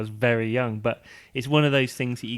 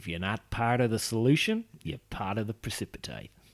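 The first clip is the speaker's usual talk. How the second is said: slower, put-on Australian accent; 5 dB quieter than usual. Speaker reads out the slogan printed beside a test-tube picture, in an australian accent. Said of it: "I don't know why I'm doing that in an Australian accent".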